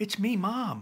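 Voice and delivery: anxious, uneasy, nervous, slightly high voice. A mother answers her son Chase, who doesn't recognize her, in a nervous voice. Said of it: "she says in a nervous voice".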